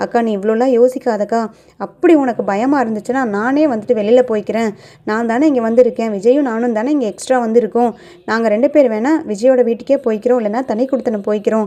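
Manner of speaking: ordinary delivery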